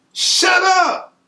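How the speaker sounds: mock yelling, pitched way up, high-pitched. Retelling being handcuffed on the front steps, yelling at the baby mama: retelling a yell. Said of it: "I'm yelling at her".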